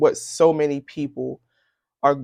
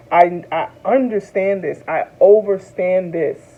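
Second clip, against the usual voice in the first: tearful, welling-up, pitched-up and raised; 5 semitones higher, 5 dB louder than usual. Talking to viewers on video, tearing up. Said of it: "and I'm tearing up".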